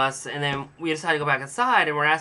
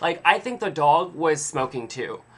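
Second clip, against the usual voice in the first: plain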